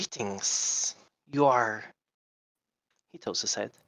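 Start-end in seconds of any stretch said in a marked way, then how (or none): 0.0-1.8 put-on reptilian lizard-man accent. Storyteller voicing a small lizard man greeting the party, lizard-man accent. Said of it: "I'm going to try my best at doing a lizard accent".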